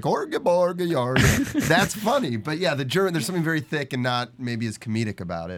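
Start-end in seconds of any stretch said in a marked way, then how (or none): 0.0-1.7 high joke Swedish accent with gibberish. Comparing funny accents to German, mock Swedish accent. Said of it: "there's certain accents like a Swedish accent".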